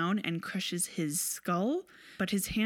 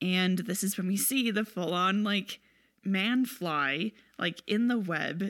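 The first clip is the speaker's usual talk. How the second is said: ordinary delivery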